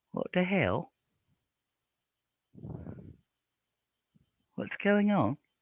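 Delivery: put-on British accent. Practicing a British accent while waiting for someone: put-on British accent. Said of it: "I'm practicing my British".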